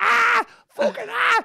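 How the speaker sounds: very high, ragged, rough screaming cry. Recounting stepping into a cold shower: reenacting own screaming. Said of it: "I just started screaming".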